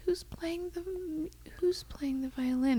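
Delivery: put-on slow, soft, faint old woman's whisper.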